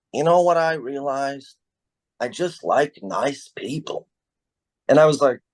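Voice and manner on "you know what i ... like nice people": put-on Boston-accented delivery. Retelling what Dennis McGonigal said to him, in Dennis McGonigal's Bostonian accent. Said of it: "in his Bostonian accent".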